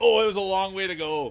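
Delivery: very loud, high-pitched yelling. Commentating on a play as it happens, yelling. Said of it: "sorry for yelling".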